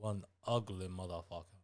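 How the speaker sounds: put-on Austrian accent, dripping with disgust. Quoting a movie line the way he says it: imitating a disgusted Austrian accent. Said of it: "It's the accent".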